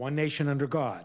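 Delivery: "nation" joined straight into "under", no pause. Reading the phrase one nation under God correctly, no pause after nation. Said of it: "no pause".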